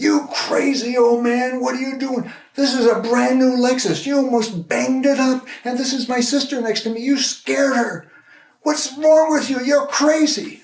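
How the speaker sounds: very high, loud furious yell. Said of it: "he yells at me".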